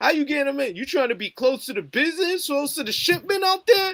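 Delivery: very high-pitched, angry, mad, demanding rant. Retelling a character calling another up mad about a mansion: imitating someone angry on the phone. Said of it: "he calls him up all mad".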